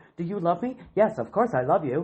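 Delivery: imitated flat, feelingless dry dubbing delivery. Complaining about voiceover dubbing, imitating a flat emotionless dubbing voice. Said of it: "there's no feeling to it whatsoever".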